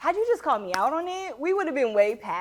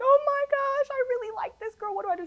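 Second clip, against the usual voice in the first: mock crying voice, very high and tearful; 12 semitones higher than usual. Retelling a phone call to a sister: imitating own past crying. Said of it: "I called my sister crying".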